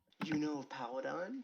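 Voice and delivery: hushed, muttered under the breath. A character scoots closer to a companion and asks, under his breath. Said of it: "just kind of like under his breath".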